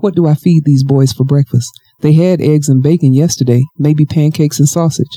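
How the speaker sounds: ordinary delivery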